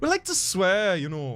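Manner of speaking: Scottish accent. Guest asked by the host to do the accent for a joke, Scottish accent. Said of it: "The accent is imperative to my understanding of this joke".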